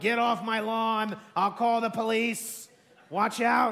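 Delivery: mock old man shouting. Comparing a man threatening people to an old man, imitating him shouting. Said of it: "He's like that old man shouting".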